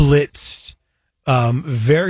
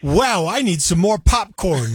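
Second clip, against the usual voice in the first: high-pitched, drawn-out, pointed tone; 5 semitones higher than usual. Describing how they'd stand up during a disrupted movie: really loud. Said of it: "I'd say that really loud".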